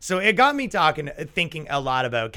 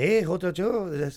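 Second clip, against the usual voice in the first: put-on very slow, drawn-out French accent; 3 semitones higher than usual. Imitating a French guy calling to a woman on the street: imitating a French accent. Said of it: "French accent".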